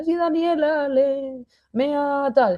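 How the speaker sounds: put-on crying child voice, high-pitched and drawn out. Acting out a daughter who comes over crying: imitating a crying daughter. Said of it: "viene mi hija llorando".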